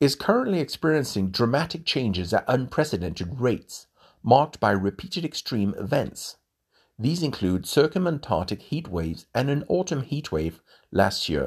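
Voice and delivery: ordinary talk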